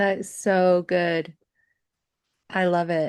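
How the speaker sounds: choked up, teary voice. Responding to another speaker's personal story about music, teary-eyed. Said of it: "I'm like getting teary-eyed over here".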